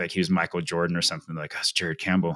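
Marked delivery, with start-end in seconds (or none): 1.5-2.4 put-on whisper. Retelling other runners spotting a famous runner: imitating a whisper.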